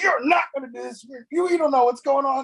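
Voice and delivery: mock, livid, furious delivery, way up high. Retelling a mother's reaction to the move, imitating a livid mother. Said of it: "she was livid".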